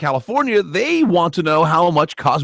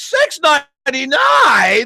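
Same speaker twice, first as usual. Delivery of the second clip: put-on outrage, higher pitch, louder; 10 semitones higher, 4 dB louder than usual. Imitating his wife reading a grocery price aloud, mock-outraged price reading. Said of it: "if you're outraged at the".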